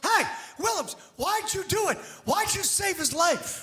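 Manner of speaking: loud, high-pitched yelling. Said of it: "Somebody from the crowd yells".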